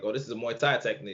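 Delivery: ordinary delivery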